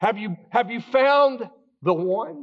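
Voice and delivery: high, dry, sarcastic jabbing tone. Retelling a film scene where the priest answers the running man: imitating a sarcastic tone. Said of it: "looks at him sarcastically and says".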